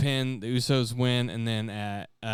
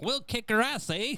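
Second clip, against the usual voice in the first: tiny put-on Irish leprechaun voice, very high; 12 semitones higher, 3 dB quieter than usual. Mocking a man who plays a bad guy, in a little leprechaun voice. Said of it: "sounds like a fucking little leprechaun".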